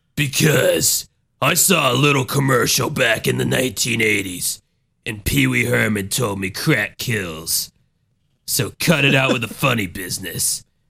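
low, dropped, righteous street-hero crime-fighter voice. Acting out a crime fighter answering a drug dealer: imitating a crime fighter. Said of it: "fighting crime and fighting druggies".

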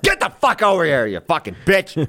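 put-on high yelling. Retelling what the neighbors might hear: imitating yelling at a dog. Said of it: "yelling at a dog".

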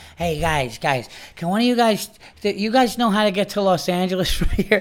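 put-on drunk man voice. Retelling a staggering drunk stranger asking directions: imitating a drunk man. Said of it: "he comes up and he staggers over and he goes".

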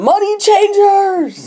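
high, slow, drawn-out yell. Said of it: "he yelled at them".

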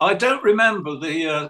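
loud shouting. Talking about a favorite comic cover, speaker is shouting. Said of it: "sorry, I'm shouting".

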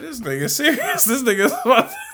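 disbelieving, laughing voice.

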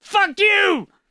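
put-on screaming with swearing, pitched very high. Retelling an old man's words as he walked out: imitating someone screaming. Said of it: "starts screaming at me".

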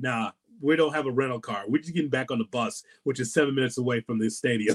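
ordinary talk

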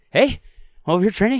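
put-on breathless, panting Boston accent, very high and fast. Showing how the impression works, sounding like you just ran, in an out-of-breath Mark Wahlberg impression. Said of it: "you sound like you're out of breath, like you just ran".

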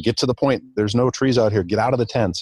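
put-on urgent yelling, held back and contained. Retelling how another dad yelled to get out of the tents: imitating someone yelling.

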